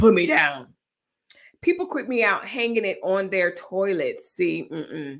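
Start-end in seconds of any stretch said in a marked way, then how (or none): 0.0-0.7 loud, put-on spooky, scary voice. Talking to the kids over a home broadcast system, scary [name] voice. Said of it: "in the scary [name] voice".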